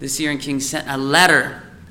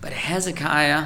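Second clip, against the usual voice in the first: plain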